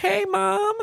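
very high-pitched, put-on little voice. Retelling the son hiding behind the cat greeting his mom, imitating a high-pitched voice. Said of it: "But he was doing it in a high-pitched voice".

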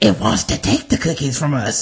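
gravelly, eerie creature voice. Speaker recalling talking to themselves like a Lord of the Rings creature, Sméagol voice. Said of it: "turned into, Schmeagol".

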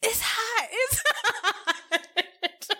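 put-on screaming, every word stretched long. Telling a story about a man on the phone, retelling his scream. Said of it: "he starts screaming".

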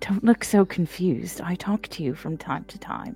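hushed, whispered voice. Voicing a character nudging a friend to talk quietly: whispering. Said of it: "is there a reason we're whispering?".

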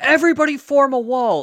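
put-on shrill child-like scream, very high and very loud. Retelling kids who trained with the Jedi shouting at the crowd; imitating kids screaming. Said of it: "start screaming like".

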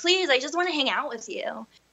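put-on tearful, pleading voice. Retelling begging a partner to stay: retelling a tearful plea. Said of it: "crying and, like, begging him just to stay".

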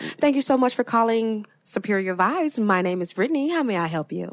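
polite, customer service phone-agent voice. Recalling how she answered calls for customers, in her customer service voice. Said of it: "this is my customer service voice".

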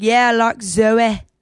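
put-on Irish accent. Showing how Josh says a word, imitating Josh's Irish accent. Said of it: "Irish sounding he is".

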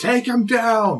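very high-pitched loud shout. Game master voicing the downed captain as he backs up: yelling an order. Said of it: "and he yells".

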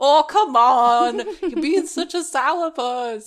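motherly voice, urging and egging on. Retelling a talk with their mum, voicing her reply: imitating their mum's voice. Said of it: "talking in my mum's voice".

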